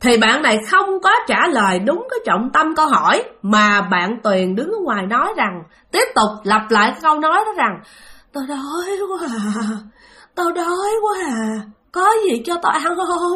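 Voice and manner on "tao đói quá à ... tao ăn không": high, creepy, ghostly, eerie moan. Telling of someone outside repeating a phrase: imitating Tuyền's eerie moan. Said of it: "nghe cái giọng rên rất là ghê".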